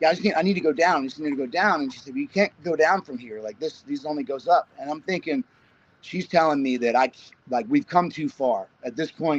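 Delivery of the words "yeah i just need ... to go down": ordinary talk, nothing marked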